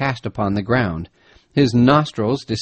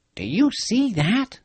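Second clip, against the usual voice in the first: very high, hushed, slow half-whisper; 11 semitones higher, 3 dB quieter than usual. Narrator reads Peterkin pointing out an open space among the bushes: half-whispered. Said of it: "whispered Peterkin".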